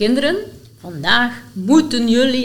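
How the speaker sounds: dire, very threatening, menacing, ominous tone. Telling how they announce plans to the children, the speaker reenacts it: mock-threatening voice. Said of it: "dan kondig ik met een heel dreigende stem aan".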